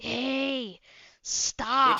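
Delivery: teacher voice with a long drawn-out hey. Retelling what a teacher told a kid: imitating a teacher. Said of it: "He sounded exactly like that".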